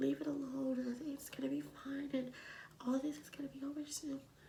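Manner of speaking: high, soft, soothing whisper.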